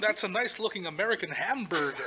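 put-on generic American accent.

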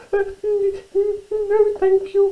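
very high, squeaky little mouse voice. Narrator reads the little mouse turning down the bear's offer, squeaking. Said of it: "squeaked little mouse".

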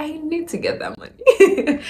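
high-pitched cry, laughed out.

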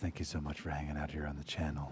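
put-on smooth jazz radio voice. Streamer thanking viewers after vowing to talk like this all stream, smooth jazz voice. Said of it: "talk like this the rest of the stream. Smooth jazz".

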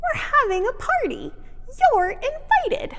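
tiny, squeaky, very high voice. Martha, on a hay pile in front of the ox, speaks up: squeaky voice. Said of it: "said in a squeaky voice".

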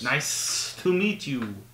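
lizard voice with hissed, drawn esses. Greeting a new partner as a lizard character: hissing lizard voice. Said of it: "With a hiss".

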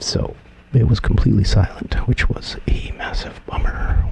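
soft, breathy, hushed whisper throughout. Explaining a past recording mistake while setting up audio, whispering. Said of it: "Why am I whispering?".

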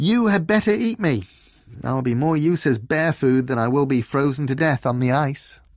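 cheery, good-humoured, cheerful delivery. A narrator reads a character's line to a bear, cheerful.

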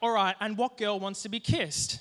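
ordinary talk

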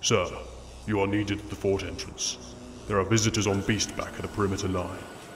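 gravelly, machine-like robot voice. A cyborg soldier walks in and reports to his superior: robotic gravelly voice. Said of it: "Talking in a robotic, gravelly voice".

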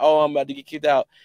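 mock, high, loud, blubbering boohoo sobbing. Retelling his own phone call about getting kicked out, imitating someone crying. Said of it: "boohoo crying about".

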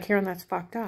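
ordinary delivery

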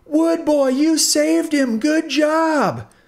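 very high, slow exclamation with "job" stretched out. Right Earbud speaks to Popsicle Stick after the garbage disposal rescue, exclaiming. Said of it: "exclaimed Right Earbud".

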